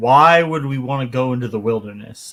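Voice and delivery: ordinary talk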